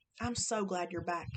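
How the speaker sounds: usual speaking voice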